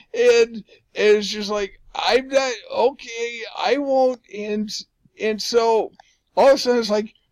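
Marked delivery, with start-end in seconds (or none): 1.9-4.2 put-on slow, hesitant, nervous voice. Speaker retelling what they said when everyone hushed, retelling a nervous reply. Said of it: "I get my nervous smile going".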